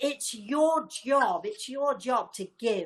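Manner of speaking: put-on, insistent, drawn-out, rebuking shouting. Retelling what someone shouted: imitating someone shouting. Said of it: "shouted at me".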